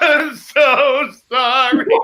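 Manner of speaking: blubbering, bawling through tearful sobs. Retelling how Patty apologized to her boss, imitating Patty bawling. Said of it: "She's bawling like a baby".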